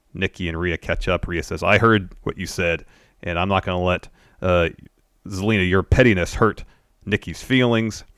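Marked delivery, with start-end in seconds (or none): none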